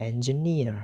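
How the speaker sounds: engineer with stress on third syllable neer. Pronunciation lesson on three-syllable words: stress on neer in engineer. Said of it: "the third syllable, that is near, is stressed".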